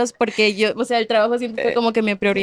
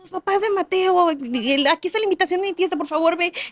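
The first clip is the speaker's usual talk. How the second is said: put-on high, chatty outgoing child voice, aquí stretched out; 7 semitones higher than usual. A mother acts out how her talkative son greets other parents, imitating an outgoing kid. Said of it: "es un artista".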